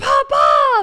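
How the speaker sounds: loud, excited yell.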